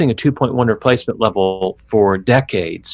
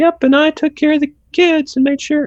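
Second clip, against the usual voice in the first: put-on housewife voice, very high-pitched. Describing how grandparents lived, acting out the wife's reply: imitating the wife's voice. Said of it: "That's my best wife voice".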